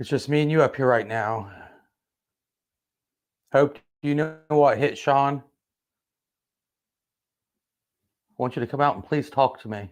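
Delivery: frightened, nervous, coaxing tone. Alone upstairs, pleading with a doll named hope to talk, legit so scared. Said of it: "I'm like legit so scared right now".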